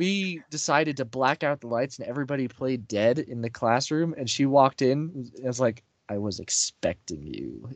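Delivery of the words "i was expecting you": dark, very low, slow menacing drawl. Retelling a Halloween prank in a darkened classroom: dark voice. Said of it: "in a dark voice".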